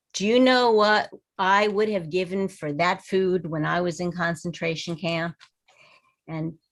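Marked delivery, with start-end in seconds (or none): none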